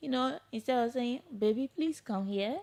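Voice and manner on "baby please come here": soft, gentle speaking tone. Showing how to ask a woman to come closer: soft, gentle tone. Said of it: "you talk to the woman soft".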